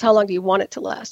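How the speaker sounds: heavily sarcastic reply, dripping with sarcasm. The speaker retells how he answered a question about the hearing, retelling a sarcastic reply. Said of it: "In a very sarcastic way".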